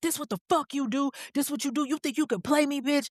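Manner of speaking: mock furious, high-pitched enraged man ranting. Retelling how a man raged at a woman by her car: imitating a furious man. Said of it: "he's losing his shit".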